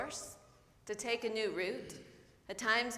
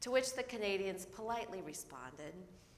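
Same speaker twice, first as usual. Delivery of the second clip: usual speaking voice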